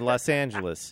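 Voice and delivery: ordinary talk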